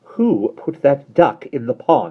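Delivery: stern, haughty, slow delivery. Narrating a story, Mary Poppins turns to the children, stern, haughty voice. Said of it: "in a stern, haughty voice".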